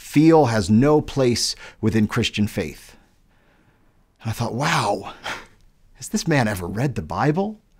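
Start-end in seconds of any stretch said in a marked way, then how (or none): 0.0-3.0 big booming voice, authoritative and commanding in tone. Retelling what a man told them, imitating his big, deep, booming voice. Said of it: "In his big, deep, booming voice".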